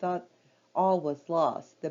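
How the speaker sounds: plain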